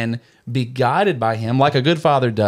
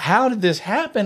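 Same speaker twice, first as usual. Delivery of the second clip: put-on hurt little boy's scream, pitched high; 9 semitones higher than usual. Retelling how the boy turned to her after slamming his fingers, acting out a scream. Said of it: "he's screaming, like".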